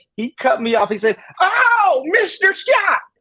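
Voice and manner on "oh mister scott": put-on high, rich East Texan accent. A man retells a texan who jumped up and cut him off, imitating a rich east texan accent. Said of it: "this rich East Texan accent".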